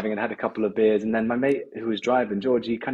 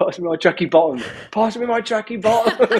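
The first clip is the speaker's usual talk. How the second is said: shrill screaming, pitched way up; 11 semitones higher, 4 dB louder than usual. Retelling a man screaming after crashing his car: retelling a scream. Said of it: "And then he's screaming".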